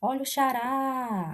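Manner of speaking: xará with stressed final rá stretched long. Teaching a simple trick for words stressed at the end: stress on last syllable rá of xará. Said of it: "eu puxo mais, eu demoro mais na última sílaba".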